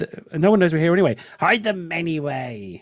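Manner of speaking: quiet parts loud, loud parts quiet, rushed then drawn out.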